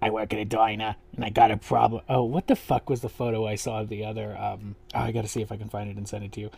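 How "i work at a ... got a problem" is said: put-on smoker voice. Quoting a contestant's line from when she put on a wig: Saint's smoker voice. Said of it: "the smoker voice".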